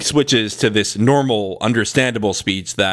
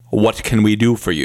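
mock businesslike tone. Retelling a character's line from a show: imitating a business voice. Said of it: "he suddenly just puts on his business voice".

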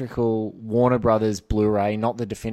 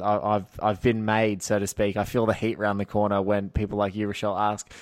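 ordinary talk

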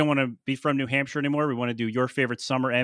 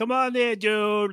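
very bad South Boston accent, pitched up; 8 semitones higher than usual. Retelling how the band heard an earlier line on the show: worst south boston accent. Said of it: "the worst South Boston accent you've ever heard".

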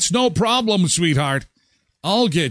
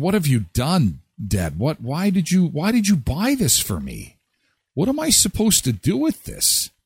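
put-on tearful little girl sobbing, wailing, swooping. Imagining a young daughter's reaction to a Barbie doll, imitating a crying child. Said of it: "she'd start crying".

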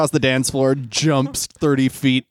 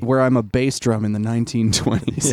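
usual speaking voice

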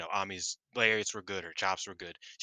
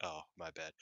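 put-on exhausted voice, lower and quieter; 4 semitones lower, 12 dB quieter than usual. Retelling a post-match promo: imitating exhausted Mayu. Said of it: "Mayu's just, like, exhausted".

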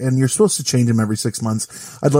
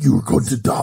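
put-on sci-fi alien creature voice. Imagining aliens arriving and threatening people, the speaker does an alien voice. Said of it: "This is my alien voice".

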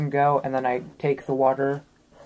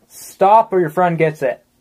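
very loud, bellowed yell; 4 semitones higher, 8 dB louder than usual. A tabletop player's character yells after two people running away, yelling. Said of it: "Can I yell after them?".

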